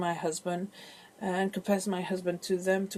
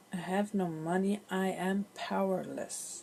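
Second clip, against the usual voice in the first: imitated desperate voice, quieter and slower; 4 dB quieter than usual. Repeating what a woman said on the phone, imitating a desperate voice. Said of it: "I heard the desperation in her voice".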